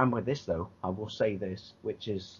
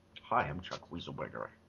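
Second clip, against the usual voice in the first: terrible, put-on attempt at an American accent; 6 semitones lower, 8 dB quieter than usual. Greeting someone as Chuck Weaselberger: terrible American accent. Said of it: "my American accent's terrible".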